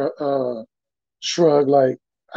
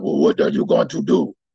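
rough, rasping, creaky put-on voice. Retelling a locker room confrontation with a rival player: Dikembe Mutombo voice. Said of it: "in his Mutombo voice".

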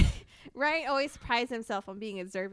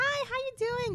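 mock happy tone, higher; 13 semitones higher than usual. Retelling how an acquaintance greeted Ryan: imitating someone being all happy. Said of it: "be all happy".

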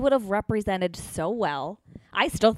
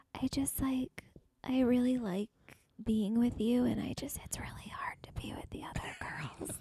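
soft, hushed, barely-there whispering voice; 4 semitones higher, 9 dB quieter than usual. Doing an impersonation of Crystal after being asked, imitating someone whispering. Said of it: "she's literally whispering now".

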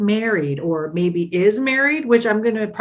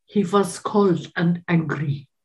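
very slow put-on foreign accent, "was" said as "vas". Coaching someone how to say a line, put-on accent turning W into V. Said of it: "you have to say it like this ... He replace every W with a V".

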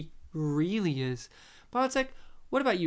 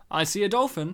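put-on blunt Australian accent. Describing a film scene, the speaker delivers Hogan's line in a blunt Aussie way. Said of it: "in the most blunt Aussie way ever".

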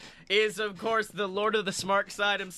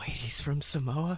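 low-key, quiet voice with a dawning, belated tone; 4 semitones lower, 4 dB quieter than usual. Imagining how a cohost reacts on learning the truth: quietly imitating Blake. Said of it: "Blake just quietly is like".

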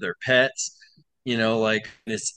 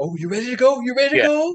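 very high, eager, excited pet voice; 12 semitones higher, 4 dB louder than usual. Showing how people talk to a dog, in a higher excited voice. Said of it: "if you talk in a higher voice".

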